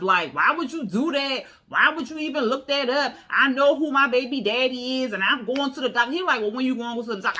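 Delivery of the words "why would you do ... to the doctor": worked up, angry and defensive tone. Retelling an argument, acting out the other woman getting mad and defensive. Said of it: "She getting all mad and defensive".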